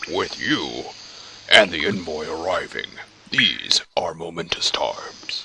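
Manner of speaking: grand, lofty, flowery ogre voice. Voicing a game character, an ogre with flowery speech, flowery ogre voice. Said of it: "How would an ogre sound flowery?".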